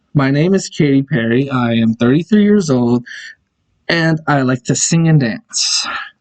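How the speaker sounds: normal talking voice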